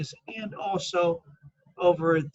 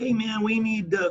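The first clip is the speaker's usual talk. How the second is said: bad New York accent, pitched slightly up; 5 semitones higher than usual. Act out Andrew Cuomo coming online with a request during the crisis, in a bad New York accent. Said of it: "I can't do a very good New York accent".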